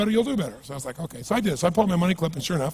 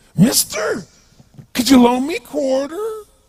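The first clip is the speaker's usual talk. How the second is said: put-on bizarre voice, much higher and louder; 13 semitones higher, 7 dB louder than usual. Retelling a man who asked him for a quarter, imitating a bizarre-sounding voice. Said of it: "He had this really bizarre looking sounding voice".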